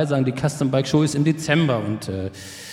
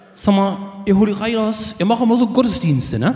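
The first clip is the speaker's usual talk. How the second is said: pitched-up, put-on Dutch accent on German; 6 semitones higher than usual. Retelling what a man said to Ralf, one of the group: Dutch accent. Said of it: "So in seinem holländischen Akzent".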